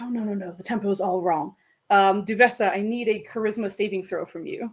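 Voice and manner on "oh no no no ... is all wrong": soft, hushed, quiet villainous voice. Voicing an enemy on a roof fiddling with his ring: soft-spoken villain voice. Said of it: "you hear softly".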